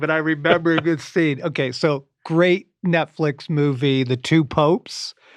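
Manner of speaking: giggling, laughing through the words. Breaking into a conversation to recall a movie scene, laughing while talking. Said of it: "I'm sorry I'm laughing".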